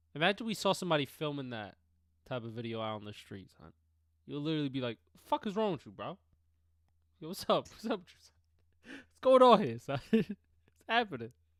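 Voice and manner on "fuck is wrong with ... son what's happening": very loud, high-pitched New York bro voice. Imitating Jess confronting someone filming on the street: New York Jess impression. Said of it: "You so New York, bro".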